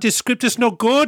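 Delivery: loud, high, attempted put-on Dutch accent. Retelling a story about a director getting the RoboCop script, in an attempted Paul Verhoeven accent. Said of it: "so I'll attempt to do his accent".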